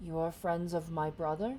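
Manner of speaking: hushed, quiet whispering giant voice. Voicing a giant who leans toward a tunnel: hushed whispering giant. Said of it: "in kind of a hushed tone, kinda, kinda whispering".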